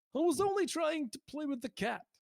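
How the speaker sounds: very high, put-on comic character voice. Doing an impression the audience may not remember: Alf voice. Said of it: "That's my Alf impression".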